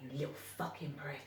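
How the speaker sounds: vicious, nasty whisper, barely audible. Retelling what parents whispered to their little boy: imitating a whisper. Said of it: "whispering to him".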